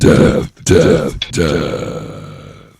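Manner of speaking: very loud, very slow, deep swooping devil voice. Asking the other speaker about their influences, in a devil voice. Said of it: "I can't match with your devil voice".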